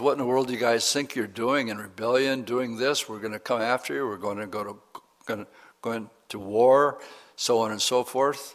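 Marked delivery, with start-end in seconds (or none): none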